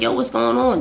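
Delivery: friendly, charming, coaxing sweet-talk, acted out. Retelling going over peacefully to some girls: imitating own sweet-talking tone. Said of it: "In this tone, bro. Talking sw-, sweet talking".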